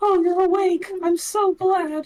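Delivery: very high-pitched, friendly tone. Voicing the friendly character Shima in a nineties RPG-style opening: friendly Shima voice. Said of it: "I can do the exact same voice as Shima would have done".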